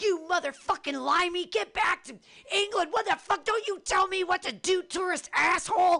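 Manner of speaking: mock, shrill, very high screaming tirade. Retelling yelling at a tourist on the street, reenacting the yell. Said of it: "And I yelled at him".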